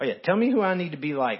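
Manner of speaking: mocking, sarcastic, challenging tone. Voicing God's imagined reply to a scripture question: retelling a sarcastic line.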